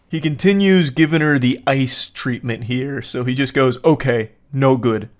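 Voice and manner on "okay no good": caveman voice. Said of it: "Actually speaking like a Neanderthal".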